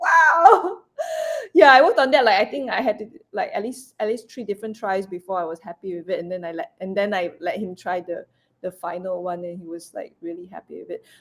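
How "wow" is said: high, loud excitement. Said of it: "I said, like".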